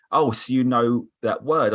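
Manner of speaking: ordinary delivery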